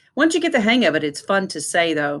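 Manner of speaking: plain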